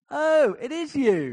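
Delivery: very loud, shrill, booming, high cry, very drawn out. Retelling how a woman ran after a man, overtook him and turned round: very loud voice. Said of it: "in a very loud voice went".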